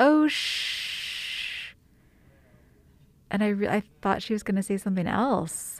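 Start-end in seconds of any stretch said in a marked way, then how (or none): 0.0-1.7 high, hushed, very dramatic gasp. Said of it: "very dramatically says".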